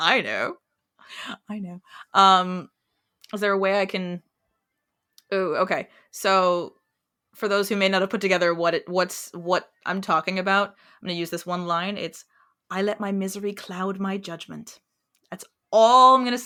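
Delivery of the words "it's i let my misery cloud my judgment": put-on British accent, much quieter. Speaker quotes one line for others to guess, British accent. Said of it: "someone that has a British accent".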